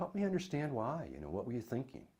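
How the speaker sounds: soft, quick, genuinely curious and inquisitive tone. Explaining how to ask why questions without sounding critical, curious tone. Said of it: "Then it's more curious".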